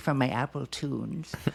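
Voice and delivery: put-on elderly woman's voice. Repeating own words about a playlist, mocking them: old lady voice. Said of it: "I sound like an old lady".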